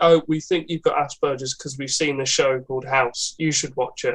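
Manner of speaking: ordinary delivery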